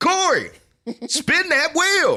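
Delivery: very high, very slow, swooping, drawn-out scream. Reenacting how he screams at Corey to spin the wheel, screamed. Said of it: "I scream it like this".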